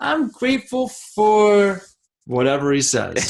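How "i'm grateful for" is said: put-on tiny, sweet, very high little-kid voice. Imitating Kaizen answering what he is grateful for: Kaizen's cute little voice. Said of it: "in his cute little voice".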